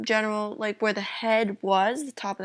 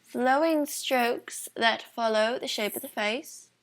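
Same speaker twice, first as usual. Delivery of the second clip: clumsy, bad, fake British accent. Explaining how to draw hair in a drawing lesson: bad British accent. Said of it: "that's bad British accent".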